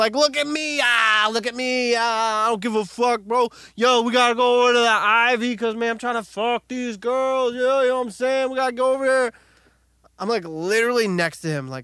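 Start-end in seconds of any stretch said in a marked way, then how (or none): 0.1-9.3 put-on pitched-up, ranting drunk bro voice. Retelling what a loud guy in the bathroom shouted: imitating a screaming loud guy. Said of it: "a guy is just screaming in the bathroom".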